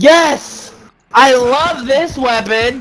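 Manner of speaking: high, slow, sarcastic cheer. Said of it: "Being sarcastic, by the way".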